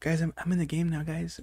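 very quiet, breathy, barely audible half-whisper. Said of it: "You whispered it like you were [name]".

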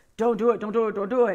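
low, devilish devil voice. Describing the voices in your head, the speaker acts out the devil voice. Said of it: "there's like the devil voice".

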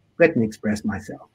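plain

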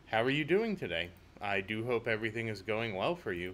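unemotive, dull, emotionless robot-like delivery. Asking the audience how they are doing, flat without emotion. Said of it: "I meant to do that with more emotion in my voice, but I guess I'm just Captain Robot today".

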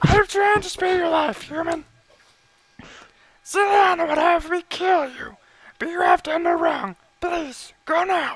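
put-on angry puppet voice. A character tells a human to go and spares his life, in an angry Elmo voice. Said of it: "I like how he's an angry Elmo".

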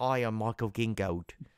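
slow, drawn-out put-on British accent. Imitating how someone says his name, in a British accent. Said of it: "pronounce his name with a British accent".

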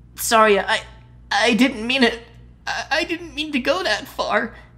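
trembling, quavering, shaky voice with stammering. A narrator reads a boy's apology to a girl, in a trembling, stammering voice. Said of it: "unable to keep his voice from trembling".

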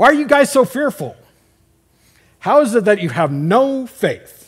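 harsh, stern scolding. Showing how people voice a quoted rebuke to fearful followers: acting out a scolding rebuke. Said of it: "here's how they would say it. This is the voice inflection. ... because it's a chew out".

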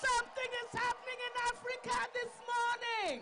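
high, energetic hype man shouting.

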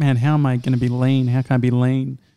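ordinary talk

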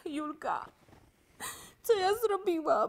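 tearful, weeping, crying voice. In a scene, the speaker turns to Julka, crying. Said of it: "Czemu tak płaczesz?".

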